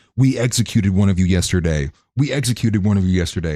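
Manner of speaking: mock cruel, all-out yell at top of lungs. Retelling a clip of a man at a demonstration: imitating someone screaming. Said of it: "he's screaming at the top of his lungs".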